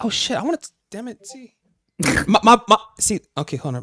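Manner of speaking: very high-pitched, excited voice. A speaker in a group conversation, suddenly interested, in a high excited voice. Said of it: "My voice gets high when I'm interested".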